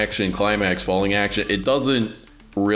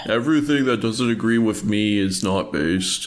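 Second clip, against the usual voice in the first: mock taunting parody voice. Parodying someone in the group who keeps saying not based, mockingly imitating someone. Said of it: "you said it in a mocking tone".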